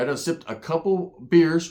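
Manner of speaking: usual speaking voice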